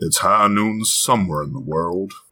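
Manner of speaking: gruff Western cowboy voice. Giving your own version of the line after someone else's, in a gruff Western cowboy voice. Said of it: "that's a good cowboy voice".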